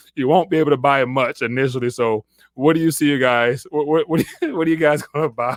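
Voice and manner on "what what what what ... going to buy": speaking while breaking into laughs. Asking the listeners what they are going to buy, laughing while talking. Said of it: "I'm sorry for laughing".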